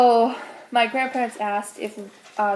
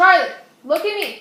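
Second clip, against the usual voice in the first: hard, high-pitched yelling; 8 semitones higher than usual. A vlogger yells at charlie to look at them. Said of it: "I'm literally yelling at him so much".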